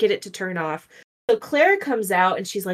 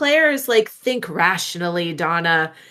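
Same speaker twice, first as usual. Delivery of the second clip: ordinary talk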